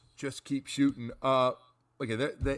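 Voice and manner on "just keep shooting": ordinary talk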